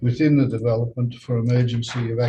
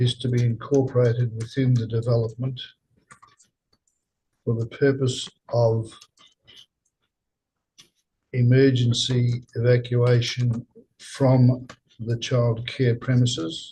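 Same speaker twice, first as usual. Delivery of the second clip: slow, deliberate reading at dictation pace. Reading out a motion's wording again after being asked to slow down. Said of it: "slow down".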